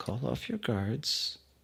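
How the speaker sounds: high-pitched, hushed half-whisper, very close. Role-playing a hero behind a man's chair, half-whispering into his ear. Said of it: "I whisper into his ear".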